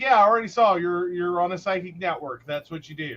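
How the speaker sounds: ordinary talk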